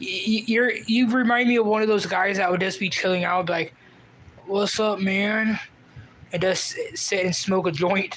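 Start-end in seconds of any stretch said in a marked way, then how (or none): 4.5-5.6 put-on relaxed, laid-back stoner voice. Imitating the kind of guy who chills and smokes a joint, imitating a laid-back chill guy. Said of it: "I don't mean to do your voice".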